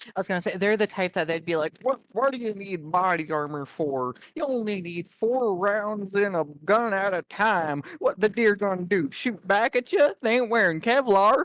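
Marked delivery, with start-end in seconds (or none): 1.8-11.4 put-on very slow, drawn-out old codger drawl. Describing an old person with antiquated views on firearms, imitating an old person. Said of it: "an old person that has very antiquated views".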